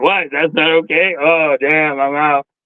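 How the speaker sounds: slow, high-pitched, drawn-out delivery. Imitating someone who just left the stream: imitating someone leaving the stream. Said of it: "He's like".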